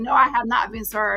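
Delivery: imitated laughing delivery. Retelling own past reply to people who said she was served: retelling laughing reply. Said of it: "I'm sitting there laughing like".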